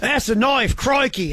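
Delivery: bad Australian accent. Joking about watching the U.S. beat the Aussies, the speaker does a bad Aussie accent. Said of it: "My bad Aussie accent".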